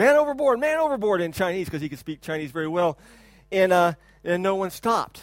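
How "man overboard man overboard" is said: high, loud, panicked yell. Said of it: "he started yelling".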